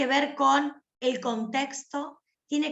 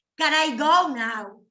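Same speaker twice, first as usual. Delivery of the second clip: put-on loud, drawn-out, irritated teenager-like annoyance; 6 dB louder than usual. Demonstrating an English phrase as a scolded teenager would say it, angry. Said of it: "A no ser que estés enojado y digas".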